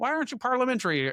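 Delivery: bad put-on Canadian accent. Imitating Canadians who complain about the American system: terrible Canadian accent. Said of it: "that was the worst Canadian accent".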